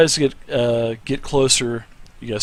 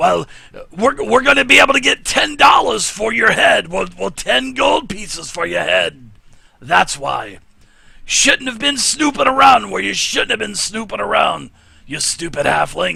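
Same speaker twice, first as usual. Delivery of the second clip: gruff, creaky, rough put-on voice, pitched up; 8 semitones higher than usual. Narrating a tabletop scene, the speaker voices a captor threatening the halfling: gruff voice. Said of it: "the gruffy voice".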